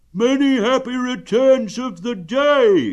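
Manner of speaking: loud, high calling out, "day" stretched. Pooh, across the river, greets Eeyore: calling out. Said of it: "called out Pooh".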